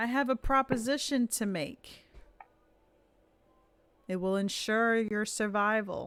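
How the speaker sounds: announcing, projected to a whole group. Voicing a character who makes a proposition to the group: raising his voice. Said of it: "And he starts raising his voice".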